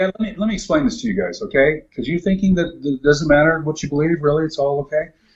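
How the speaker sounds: plain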